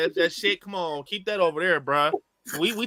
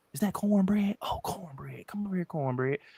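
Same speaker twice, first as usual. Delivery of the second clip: quiet whispered delivery; 8 dB quieter than usual. Retelling a scene where voices call a man outside: imitating whispering vampires. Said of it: "You hear the whispering".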